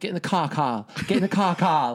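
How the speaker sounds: put-on Australian accent. Quoting a woman in a movie: Australian accent. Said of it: "she has an Australian accent, so she's like".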